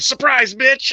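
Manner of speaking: mock, very high screaming yell. Retelling what Nyla Rose screamed before hopping in: imitating Nyla Rose screaming. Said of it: "just her just screaming".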